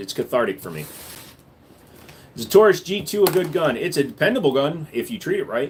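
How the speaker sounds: ordinary talk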